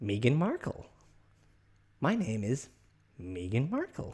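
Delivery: put-on animated American accent with swooping pitch. Imagining someone asked her name, speaker answers as her: Meghan Markle American accent. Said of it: "Like with obviously with her um, American accent".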